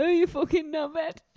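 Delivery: put-on mocking shout. Retelling a partygoer shouting from a window to the street: imitating someone shouting. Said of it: "started shouting to someone down on the street".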